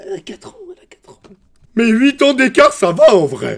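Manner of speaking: shrill, very high, very loud swooping sing-song. Acting out comments seen from people: imitating people's comments. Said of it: "j'imite les commentaires".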